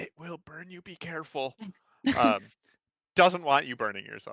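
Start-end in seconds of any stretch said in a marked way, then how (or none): 0.0-1.5 barely audible, very quiet, hushed half-whisper. Describing what happens, the speaker quotes Kadri's warning, half-whispering as Kadri. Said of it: "Kadri will whisper".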